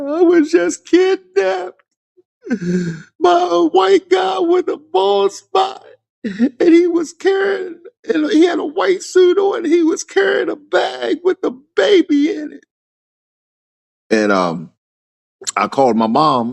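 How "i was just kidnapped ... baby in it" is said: put-on crying voice, higher pitched. Retelling what they said at a friend's mom's door: imitating own past crying. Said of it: "And I'm busting out crying".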